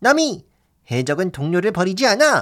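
animated cartoon voice of a young pirate boy. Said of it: "네 루피 성대모사였고요".

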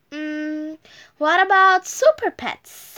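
ordinary delivery

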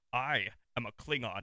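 loud slow proclaiming voice. Retelling meeting an actor who put on his Worf voice. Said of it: "got his voice".

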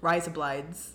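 put-on Australian accent. A co-host shows they can say a title in an australian accent. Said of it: "I can say Razor Blades in Australian".

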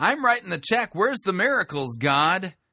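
put-on demanding tone. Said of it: "what the expectation is there".

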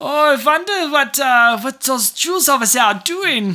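put-on German accent. Showing how they would do a german accent, german accent. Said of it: "If I had to do a German accent".

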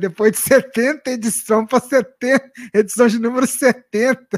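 speaking through laughter. A web radio host on the show, laughing while talking. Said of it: "Eu estou rindo aqui".

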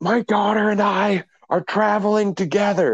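mock screeching holler, very high, top of lungs. Retelling a mother traveling with her daughter, imitating her shouting at everyone. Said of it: "she's shouting at everyone at the top".

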